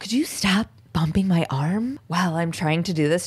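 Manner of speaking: put-on speech through clenched teeth. Retelling a sketch artist's words to Lisa, who keeps knocking his arm; retelling speech through teeth. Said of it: "he's talking at her through his teeth".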